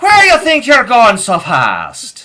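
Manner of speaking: put-on very high, very loud, swooping old Irish man brogue. Playing a subway police robot stopping someone: old irish man voice. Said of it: "Make him an old Irish man".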